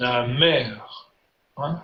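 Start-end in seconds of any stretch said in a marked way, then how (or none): 0.0-0.7 namer with stress on last syllable -mer. Explaining word stress in french: namer with stress on last syllable. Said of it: "la dernière syllabe avec l'accent".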